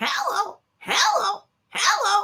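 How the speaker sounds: high, chattering, talking parrot voice. Voice actor recalls a parrot he voiced on a show: parrot voice. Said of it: "I did a parrot".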